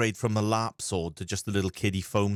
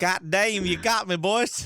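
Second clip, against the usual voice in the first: put-on Southern accent, much higher; 11 semitones higher, 3 dB louder than usual. Pressed by the others to reveal his real voice, he answers in a Southern redneck accent. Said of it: "give us a real voice".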